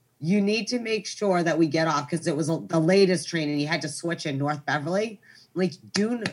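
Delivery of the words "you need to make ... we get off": ordinary talk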